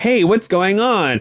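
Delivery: overexcited online video host voice, high, bright, patronizing. Showing the voice used with people thought younger and dumber, excited voice for younger people. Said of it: "This is my excited voice".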